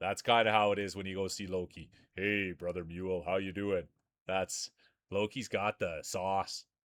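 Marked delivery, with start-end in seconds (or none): 2.1-3.8 slow, unhurried cadence, deep low manly voice. Describing how Loki greets Mule when you go see him: Loki's slow deep manly voice. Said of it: "A slower cadence and more of a deeper, manly type voice".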